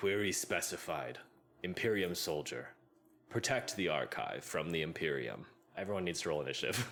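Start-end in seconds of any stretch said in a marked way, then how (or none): 0.0-5.4 stony, statue-like stone guardian voice. Running a game, the speaker voices what the players all hear; booming, stony voice. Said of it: "You all hear a booming, stony voice".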